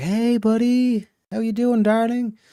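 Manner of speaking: very high, slow, cordial and mannerly charm. Acting out playing the good cop on walking in: cordial good cop voice. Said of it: "very cordial, very mannerly".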